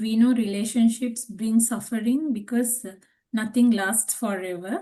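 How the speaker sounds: ordinary delivery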